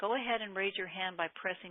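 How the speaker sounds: plain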